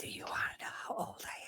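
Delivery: soft, hushed whisper, barely voiced. Leaning over to ask a companion a question in character: whispering. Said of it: "Whisper to her".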